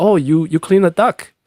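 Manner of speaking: high, fake broken-English foreign accent. Retelling answering a spam caller, pretending not to speak English: put-on accent. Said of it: "I usually pick up with an accent".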